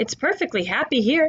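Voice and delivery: ordinary talk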